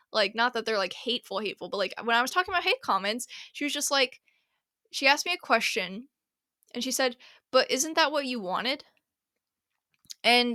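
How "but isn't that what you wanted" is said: mock patronizing, condescending tone. Retelling a question a woman asked about hate comments: imitating a condescending question. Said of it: "the way she said it was kind of a little bit condescending".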